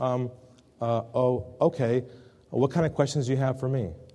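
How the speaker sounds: put-on quiet voice. Speaker retells a man's reply on the phone after a silence, imitating a quiet voice. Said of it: "in a quiet voice".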